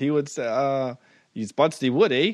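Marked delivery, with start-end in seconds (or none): 1.3-2.3 put-on Canadian accent. Riffing on how a canadian man would say it, the speaker does a put-on canadian accent. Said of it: "he is Canadian, so it would sound different".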